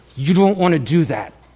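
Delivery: soft, hushed, intimate murmur spoken very close. Retelling how someone said it quietly in the speaker's ear: imitating someone speaking softly. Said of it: "he just kinda said real softly".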